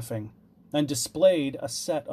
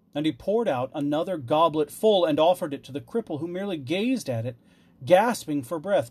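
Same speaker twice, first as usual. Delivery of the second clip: plain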